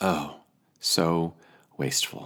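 slow muttered aside. Voicing Judas's reaction to what Mary does, muttering under his breath. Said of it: "we can hear Judas muttering under his breath".

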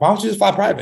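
mock nonchalant tone. Retelling what he asked on the phone, imitating a nonchalant question. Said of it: "he said it, like, just so, like, nonchalant".

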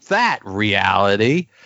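sneering, almost sassy tone. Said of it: "picks up on that in an almost sassy way".

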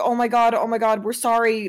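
ordinary talk

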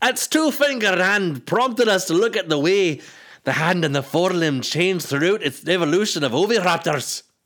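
clumsy Scottish accent, pitched way up and loud. Rereading a quote aloud as a joke: bad scottish accent. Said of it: "my Scottish accent is bad".

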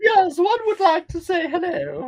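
very high, loud, swooping lady voice. Showing the one lady voice used for voice work: imitating the Queen. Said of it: "My lady voices tend to be just the Queen".

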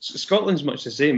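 ordinary talk, nothing marked

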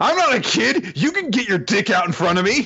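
very high, affronted, defensive delivery. Retelling Kay's reply after being called a kid, imitating Kay getting defensive. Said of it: "Kay gets all defensive".

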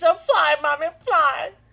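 put-on very loud, high, tearful child's crying wail. A mother acts out her daughter crying over a fly in the house, imitating someone crying. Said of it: "she's crying because there's a fly in the house".

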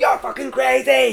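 mock shouting. Retelling the man below on the rope shouting up at him, imitating someone shouting. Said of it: "he shouts up".

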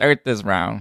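put-on defeated tone. Acting out a flat-earther back from space, sounding put-on defeated. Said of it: "he's very defeated".

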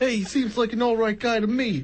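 very high, fake, bad Chicago accent. Retelling a proposal story, speaker voices the girl's dad: bad Chicago accent. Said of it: "That is not a Chicago accent".

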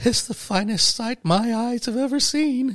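play-acted tearful, choked up and very high. Retelling a crew member's words after a factory tour: imitating Derek choked up. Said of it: "getting really legitimately choked up".

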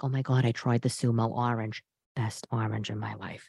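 low, quiet, creaky gushing voice.

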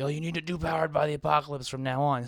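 imitated yelling. Acting out what he is probably yelling at the radio, imitating someone yelling. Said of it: "he's probably yelling at the radio right now".

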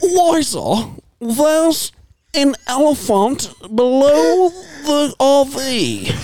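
put-on very high, slow, old-fashioned British accent. Showing off an impression he thinks he does well, Nigel Thornberry British accent. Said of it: "the 1920s African safari British accent".

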